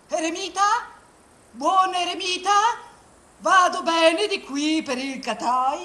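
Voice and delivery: calling out loudly. Storyteller voices the hero reaching the hermit's mountain and hailing him: calling out to the hermit. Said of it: "perché [name] è una testa di coccio. / Sconsolato ma testardo, l'eroe prosegue fino alle pendici di una altissima montagna dove vive un bianco eremita. / Lui, manco a dirlo, / Cerco [name], / con Carl".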